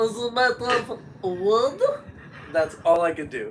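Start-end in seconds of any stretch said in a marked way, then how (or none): 0.0-1.8 high, very slow, stretched-out character voice. Doing the one line a show character says: Woody Woodchuck voice. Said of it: "I can do that voice".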